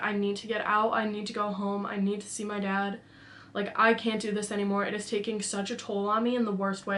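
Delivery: put-on crying, tearful, pleading voice. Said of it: "I'm crying".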